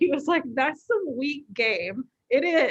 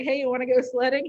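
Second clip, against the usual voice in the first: mock smooth, cocky flirting tone. Joking about how a character asks someone to go sledding: mock smooth finger-gun flirting. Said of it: "I'm pretending like he's finger gunning me".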